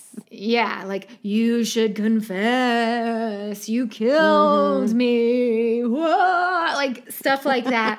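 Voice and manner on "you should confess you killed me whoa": slow, ghostly haunting voice with "me" stretched out. Retelling a character pretending to be the dead Lawson: ghostly voice of the dead Lawson. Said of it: "pretending to be the voice of the dead Lawson".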